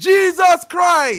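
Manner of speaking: put-on Jamaican accent. Reacting to a $50 donation, in a fake Jamaican accent. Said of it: "With my fake Jamaican accent".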